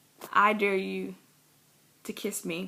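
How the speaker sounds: mock whispered voice. Retelling a dare during a game of truth or dare: imitating a whisper. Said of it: "in a whisper".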